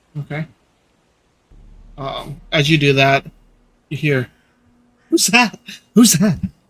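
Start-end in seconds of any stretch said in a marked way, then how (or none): 5.1-6.4 put-on higher, younger-sounding child's voice. Voicing someone calling from inside a house after a knock: younger voice. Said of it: "a younger voice".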